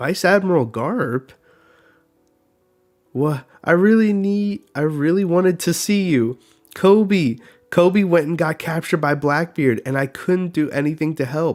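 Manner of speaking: whiny, near tears. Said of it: "Quit whimpering".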